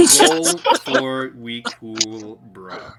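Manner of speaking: very slow, stretched-out, drawled mocking voice.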